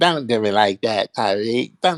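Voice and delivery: put-on English with a Mexican accent. Mocking a caller who just hung up: Mexican accent imitating Cam. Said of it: "we can't hear his Mexican accent".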